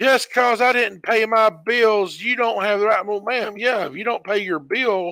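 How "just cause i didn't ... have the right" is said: put-on old lady voice, yelling repeatedly. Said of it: "the thing she kept yelling".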